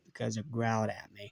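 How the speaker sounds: soft, flat, dead-level deadpan monotone. Recounting a cartoon scene, quoting SpongeBob answering Mister Krabs in a flat deadpan tone. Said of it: "in the most flat tone you can imagine".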